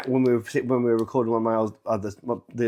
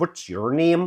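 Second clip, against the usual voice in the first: high, aggressive Northern Irish Belfast accent; 5 semitones higher than usual. Comparing a Northern Irish accent with a soft southern Dublin one, louder, quite aggressive Belfast accent. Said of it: "that's the Belfast accent".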